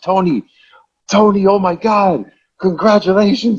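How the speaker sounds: high-pitched, freaked-out, thrilled yelling. Recall a usually stoic woman congratulating you, imitating someone yelling, freaking out. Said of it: "She was yelling".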